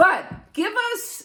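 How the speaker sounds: screaming. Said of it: "sorry, I know I'm screaming".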